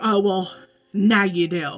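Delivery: put-on rude voice. Retelling a rude reply about a taken seat: imitating a rude reply. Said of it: "she was very rude".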